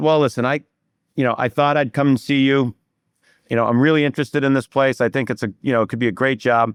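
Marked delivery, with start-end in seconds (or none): none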